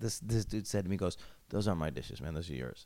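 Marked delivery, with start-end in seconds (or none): 1.5-2.8 put-on dry, low, dead-serious, straight-faced tone. Retelling what a roommate said: imitating a straight-faced reply. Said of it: "with a straight face".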